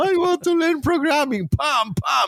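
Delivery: put-on high, innocent child voice.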